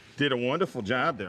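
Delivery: normal talking voice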